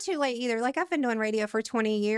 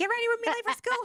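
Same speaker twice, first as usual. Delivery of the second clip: high-pitched mock yell. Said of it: "I start yelling at kids".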